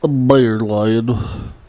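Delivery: mocking, very slow, drawn-out voice.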